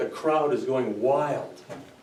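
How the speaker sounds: very slow and steady delivery, then a pause.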